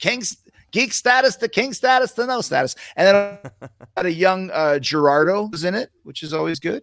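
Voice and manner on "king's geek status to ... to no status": put-on Yiddish-influenced accent.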